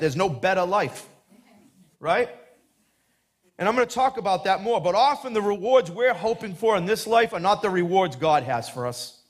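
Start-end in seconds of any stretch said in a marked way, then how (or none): 0.0-1.1 put-on Boston accent. Talking to fellow Christians, quote a pastor's saying in Pastor Brian's Boston accent. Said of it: "as Pastor Brian says in his Boston accent".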